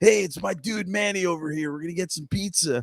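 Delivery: high, full put-on cartoon character voice. Retelling a voice actor greeting a fan: Michelangelo's voice. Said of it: "he started speaking in Michelangelo's voice".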